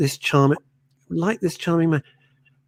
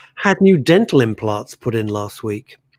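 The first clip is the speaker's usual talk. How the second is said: plain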